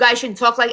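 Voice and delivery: ordinary talk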